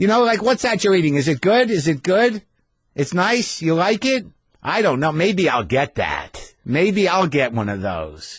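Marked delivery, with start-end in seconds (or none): 0.4-4.2 put-on old lady voice, higher pitch.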